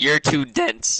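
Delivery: voice breaking and cracking under stress. Speaker stressed about where the group conversation is going, voice cracking. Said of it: "Voice crack".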